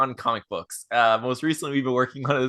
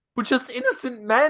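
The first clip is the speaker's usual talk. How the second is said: mock sincere puppet voice, higher pitched; 10 semitones higher than usual. Retelling a clip where a little bear puppet speaks: imitating a puppet's sincere delivery. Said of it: "the way he says it is so sincere".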